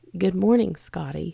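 put-on soft, quiet voice. Retelling quietly greeting someone so as not to scare him: imitating own soft greeting. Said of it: "But I said it like that".

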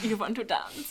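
put-on European accent. Picturing the YouTuber as Darcy asking to dance: Flula impression. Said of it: "I don't know if that was a good impression of Flula".

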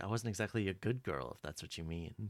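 refined, heavily acted, theatrical line reading. Retelling a scene, quoting a character's line: Sarah Alcott's refined way of talking. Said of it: "she has this very, like, refined way of talking".

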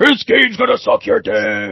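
put-on, swooping arena game announcer voice. Imagining the announcer while watching a show: announcer voice. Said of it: "I can almost hear the announcer".

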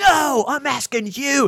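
mock angry, drawn-out, very high voice. Retelling a radio host's reply: imitating an angry veteran. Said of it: "And he was mad".

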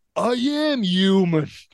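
put-on yelled New York Italian accent, dropping the h. Retelling a scene's line: Gerard Christopher New York accent. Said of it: "in his like New York Italian American accent, just goes, ... No need for an H".

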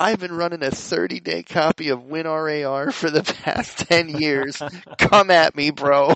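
through laughter. Speaker reads aloud a funny top comment from a guy, barely holding back laughter. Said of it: "I can barely say it without laughing".

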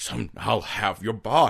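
put-on creepy, threatening devil voice. Retelling a scene where the devil threatens a little boy: imitating a threatening devil. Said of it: "just being like".

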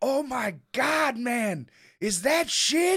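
very high, long, drawn-out shriek. Retelling how the guy doing yard work reacted: imitating someone screaming. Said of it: "he screams".

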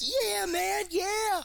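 very high, loud, freaked-out bird-like shouting.

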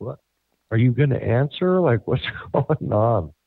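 mock calling out, as if across rooms. Retelling calling out to her, thinking she walked into the kitchen: retelling own yell. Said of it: "so I'm yelling like".

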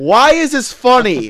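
stern disapproving voice. Retelling a mom walking in on laughing boys: imitating a stern mom. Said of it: "with the most stern look on her face".

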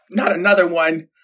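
normal talking voice

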